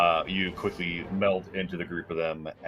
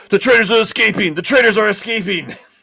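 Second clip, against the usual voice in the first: shrill, very loud, high-pitched shout; 13 dB louder than usual. Narrating a tabletop game, voicing an ensnared guard as the prisoners flee, shouting. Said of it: "shouts out".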